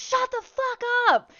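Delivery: very high, loud, slow furious scream. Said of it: "I just screamed".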